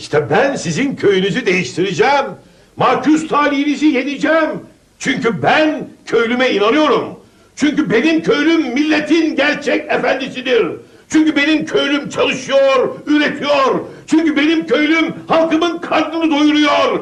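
shrill, very high shouting, oratorical. A party speaker addresses villagers, shouting speech. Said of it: "Ne bağırıyorsun bey, ne hesleniyorsun?".

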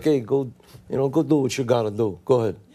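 quiet tough-guy voice. Asked what tough guys say, showing how a real tough guy talks very quietly. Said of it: "they talk very quietly".

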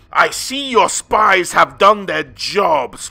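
words spat out, loud and high. Confronted by the Supreme Patriarch and his guards, the accused spits back: spat out. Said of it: "spat Catelyn".

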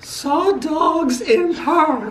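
squeaky, very high put-on character voice. Reading Bubba's written gratitude aloud as asked: Bubba's voice. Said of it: "you have to read it in Bubba's voice".

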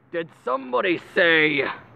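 grand, heroic superhero announcing voice. Hearing a friend say nerd, the speaker announces and does a superhero voice. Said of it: "Superhero voice".

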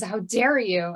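offended gasp. Recapping a scene, the speaker acts out Dean's reply to Sam: Dean's mock-offended gasp. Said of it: "Dean gasps and says".

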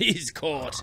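high, loud, delighted, gleeful joyful cry. A character watching a sleeper get caught and tied with rope: crying out joyfully. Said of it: "cried Moonface joyfully".

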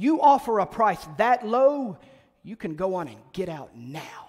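put-on angry rebuff tone. Retelling being thrown out of a souvenir shop after lowballing: mock-angry shopkeeper. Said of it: "He's mad. Like, legitimately mad".

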